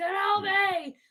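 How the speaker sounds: very loud, strange, shrill, high yell. Retelling a meme where Darth Maul yells: imitating Darth Maul's weird yell. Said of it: "he starts yelling".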